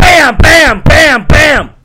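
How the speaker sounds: deliberately loud. Making an observation to a listener, being purposely loud. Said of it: "I'm being purposely loud".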